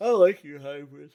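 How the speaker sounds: very loud words yawned out. Complimenting the other speaker's hybrid rear bumper: yawning while talking. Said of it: "sorry, I'm yawning".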